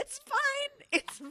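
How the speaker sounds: very high, slow, acted false calm covering panic. Imitating a friend who stays calm outwardly while panicking: imitating forced calm hiding panic. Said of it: "you hear in her voice, like, inside, she's having a complete freak out".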